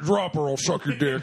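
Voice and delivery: put-on robotic police voice. Doing a requested RoboCop impression, Buffalo Bill-esque. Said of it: "very like Buffalo Bill-esque RoboCop".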